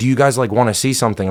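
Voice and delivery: choppy, halting, non-native broken English phrasing. Retelling what a passing stranger asked: imitating broken english. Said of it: "in broken English".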